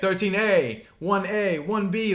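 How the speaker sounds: high, very slow, drawn-out called-out yelling. Retelling a man calling out moves during a Superman fight, retelling yelled-out commands. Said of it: "like he's yelling out all these".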